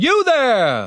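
piercing, very high, shrill shout. Narrator reads a leader's voice calling to a hiding halfling, shouted. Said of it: "Shouted the voice".

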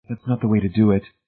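ordinary delivery

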